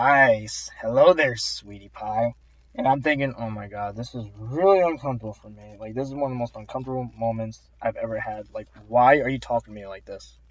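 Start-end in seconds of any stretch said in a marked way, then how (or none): 0.0-2.3 slow, odd, put-on old-timer voice. Retelling a customer at the register answering her greeting, in a weird old boomer voice. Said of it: "in this really weird and old, like, boomer voice".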